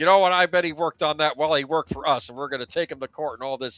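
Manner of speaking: play-acted irate voice, all worked up. Retelling a former boss's reaction to his ex-employee, imitating an angry boss. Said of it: "And he's getting all angry".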